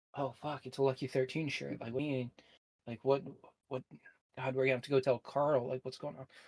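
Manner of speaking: hushed whisper. Narrator voicing the mayor and deputy talking among themselves, whispering. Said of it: "they're just like t- like kind of whispering".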